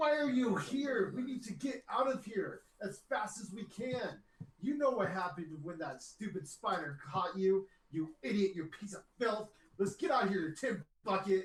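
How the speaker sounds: angry gnome yelling. Voicing an angry spectral gnome scolding another player's character: angry gnome yelling. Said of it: "he summoned an angry master".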